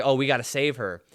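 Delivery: normal talking voice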